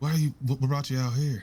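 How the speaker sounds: hushed tone, still fully voiced, not whispered. A tabletop player voices their character questioning someone: hushed tone. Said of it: "kind of in a hushed tone, but not like quiet".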